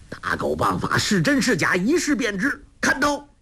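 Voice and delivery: very high, shrill, hot-tempered shout, pitch climbing. A short-tempered elder, out of patience, lunges at an opponent, shouting impatiently. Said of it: "性子暴躁，已听得老大不耐，挺立扑向黄蓉叫道".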